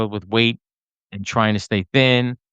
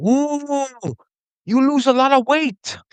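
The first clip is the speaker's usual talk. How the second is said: put-on Chinese accent, very high and slow. Retelling what the tailor said during a fitting: imitating a chinese tailor's accent. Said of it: "that was my Chinese impression".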